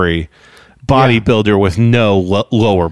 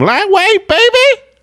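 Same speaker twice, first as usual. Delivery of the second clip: mock, very high screamed delivery. Describing a bodybuilder yelling between every lift, retelling Ronnie's scream. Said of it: "he would scream".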